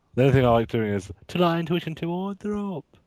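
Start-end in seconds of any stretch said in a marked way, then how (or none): 1.3-2.8 high, slow, drawled bad British accent. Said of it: "that accent".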